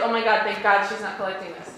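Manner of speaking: usual speaking voice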